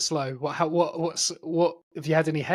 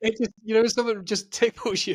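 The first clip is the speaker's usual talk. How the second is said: high laugh-crying, crying with laughter through the words; 6 semitones higher than usual. Apologizing mid-conversation, still crying with laughter. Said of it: "I'm crying still".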